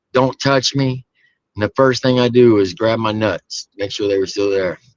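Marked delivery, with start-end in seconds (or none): 0.1-1.0 mock screamed, light, mild yelling. Retelling screaming at the medic who tried to pick you up: imitating a scream. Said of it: "I'm screaming at him".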